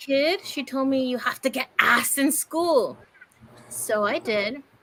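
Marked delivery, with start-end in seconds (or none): 1.1-3.0 put-on Spanish-accented English voice.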